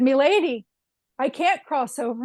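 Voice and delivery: put-on thick Irish accent. Quoting a man the speaker once talked to, in a heavy Irish brogue. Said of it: "He had a very heavy Irish brogue".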